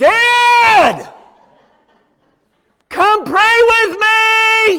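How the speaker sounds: put-on high, loud, slow shout in a child's voice.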